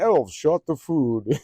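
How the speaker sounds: high, loud, synthesized speech-chip game announcer voice. Recalling voices made from an announcer's speech chip; imitating the announcer's voice. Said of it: "used to make those voices like".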